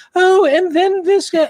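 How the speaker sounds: very high falsetto woman's voice, drawn out. Retelling how another guy read articles on his phone, imitating a lady's voice. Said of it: "he'd do a, a lady's voice".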